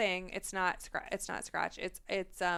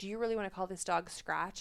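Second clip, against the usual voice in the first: put-on very serious grave tone, quieter; 5 dB quieter than usual. Retelling a husband's question in a parking lot: imitating a very serious tone. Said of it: "like, very serious, and he goes".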